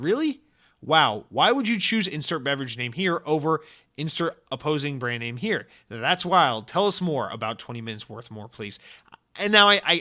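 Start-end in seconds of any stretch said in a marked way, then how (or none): none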